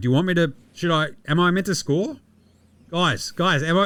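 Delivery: acted hesitant, unsure tone, pitched high. Retelling a runaway touchdown, acting out the player asking the sideline. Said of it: "he's looking at the sideline going".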